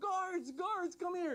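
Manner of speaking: high-pitched, hollering, calling shout. Retelling a story where a man calls for the guards: imitating a shout. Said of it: "he starts shouting for the guards".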